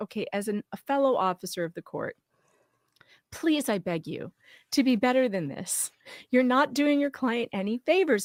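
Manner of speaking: steady, calm fatherly voice, sincere and serious. Imitating a fellow lawyer begging misbehaving lawyers to be better: calm fatherly voice. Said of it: "he would speak to them in a fatherly way".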